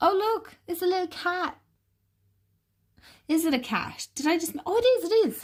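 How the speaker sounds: gushing, super excited, very high squeal. Spotting little cats in the artwork of a card: super excited. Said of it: "I got super excited there".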